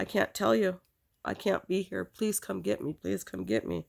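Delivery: pleading, begging tone. Retelling a past phone call, retelling a begging plea. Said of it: "And I just begged".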